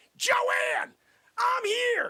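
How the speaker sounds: loud, high-pitched yelling. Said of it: "I gotta yell at my friggin' number two".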